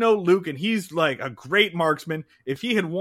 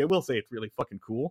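ordinary delivery

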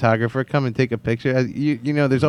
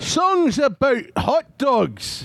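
very slow, high, sing-song Scottish brogue; 12 semitones higher than usual. Performing a show title in a booth-style read on request: Scottish accent. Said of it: "We want Scottish accent in ours".

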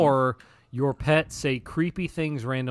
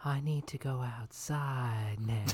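eerie, creepy, very hushed quiet voice; 3 semitones lower, 11 dB quieter than usual. Asked for an example of what the pet says, in a creepy voice. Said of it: "in your creepiest voice".

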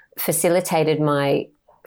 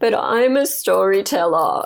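mock crying, put-on tears; 4 semitones higher, 3 dB louder than usual. Speaker recalling what they said on a call with the listener: retelling crying. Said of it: "I was actually crying".

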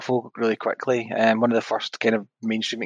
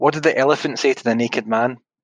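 ordinary talk, nothing marked

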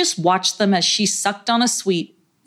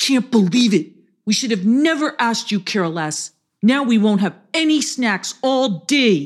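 very angry, furious outburst; 2 semitones higher than usual. Reading a story aloud, a character scolding a friend who forgot snacks: very angry voice. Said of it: "said Mad Adam in a very angry voice".

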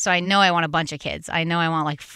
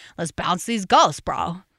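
put-on Long Island bro accent. Quoting a TV skit's bros who sound like her brothers: Kroll Show bro voice. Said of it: "these bros that sound like my brothers when they talk".

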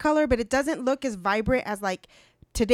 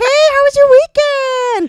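acted very high, very loud, sunny cheerful chirp; 13 semitones higher, 13 dB louder than usual. Speaker acting out how they chat to people at work, imitating cheerful chatter. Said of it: "You're the cheerful one?".

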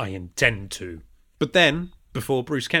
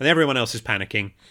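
ordinary talk, nothing marked

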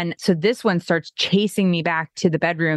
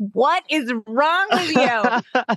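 raised, yelling voice, shouted out; 7 semitones higher than usual. A wife retells her husband yelling after she kicked him; retelling husband's yell. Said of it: "And he's yelling".

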